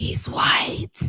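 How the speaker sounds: whispering voice. Retelling how a gym worker leaned in: imitating someone whispering. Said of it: "she was talking so light".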